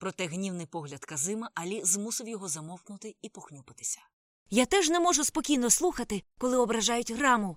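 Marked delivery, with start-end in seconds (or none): 4.5-7.6 very loud, high-pitched yelled retort. Ragguram shouts back at Farukh during their quarrel. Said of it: "кричав у відповідь Рагурам".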